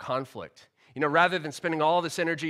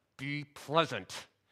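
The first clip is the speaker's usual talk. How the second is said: put-on speech through clenched teeth; 7 dB quieter than usual. Retelling what their mother told the kids in public, imitating speaking through clenched teeth. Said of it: "with clenched teeth".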